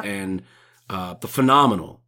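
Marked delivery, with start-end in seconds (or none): 1.1-1.8 heavy, raised sarcastic tone laid on thick. Naming a film the two actors starred in: heavy sarcasm. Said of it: "Sarcasm. Very heavy right there".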